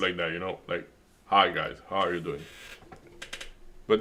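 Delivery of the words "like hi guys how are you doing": really deep, announcer-style delivery. Showing someone what their presenter voice sounds like, really deep presenter voice. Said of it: "really deep".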